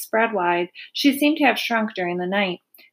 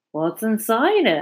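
usual speaking voice

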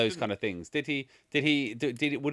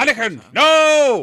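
very loud, very high shout, not stretched; 12 semitones higher, 15 dB louder than usual. Recalling a film scene where Qui-Gon's voice calls out: imitating Qui-Gon shouting. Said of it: "when he shouts at Anakin".

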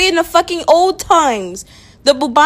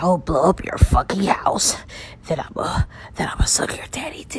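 hushed, breathy, menacing anime villain whisper; 10 semitones lower, 9 dB quieter than usual. Speaker shows how he would sound if he really wanted to: anime villain voice. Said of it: "if I really wanted to sound like an anime villain".

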